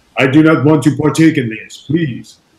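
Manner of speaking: put-on clearly assumed German-accented speech. Retelling turning down an offer in Memphis, German accent. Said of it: "in my German accent".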